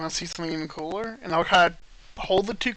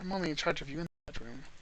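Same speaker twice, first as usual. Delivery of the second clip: hushed, leaned-in half-whisper, close and very quiet; 2 semitones lower, 11 dB quieter than usual. A character leans in close to her, half-whispering. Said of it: "I'll kind of lean in and whisper to her".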